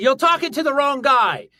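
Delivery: clumsy put-on English accent, very high pitch. Quoting a member of Parliament, the speaker repeats his words in a bad English accent. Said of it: "I'm bad at English accents".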